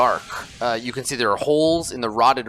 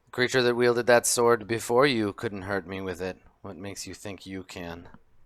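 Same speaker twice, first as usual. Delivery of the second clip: scornful, sneering witch voice with a rumble; 2 semitones lower, 4 dB quieter than usual. Narrating a scene, the speaker voices a witch answering a threat: sneering witch voice. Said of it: "and she sneers".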